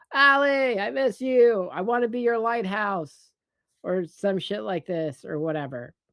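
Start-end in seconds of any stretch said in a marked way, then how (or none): 0.2-3.3 high, full-throated, put-on scream at top of lungs. Retelling a film scene of calling outside a home: imitating someone screaming. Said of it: "he's screaming".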